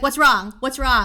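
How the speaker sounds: mock talking with mouth full. Speaker retelling her husband asking what's wrong, imitating talking with mouth full. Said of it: "my husband has a mouthful of sushi".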